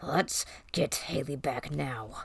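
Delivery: quiet, slow, drawn-out, commanding growl. Narrator reads a story character's line after a companion is taken; growling voice. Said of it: "I said with a growling voice".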